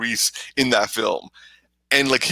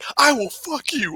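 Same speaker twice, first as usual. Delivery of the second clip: angry yell, pitched higher; 12 semitones higher than usual. Retelling a movie scene where a character yells at a man in a theater: imitating John Cena yelling. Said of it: "when he's yelling at the dude in the movie theater".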